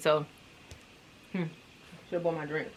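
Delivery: talking while eating. Apologizing to viewers for eating during the video, talking while eating. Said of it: "I'm eating".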